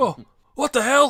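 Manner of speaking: very high, loud, shrill startled yell. Voicing guests waking to a ghost sound: freaked-out startled voice. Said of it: "After I hear 'em freaking out".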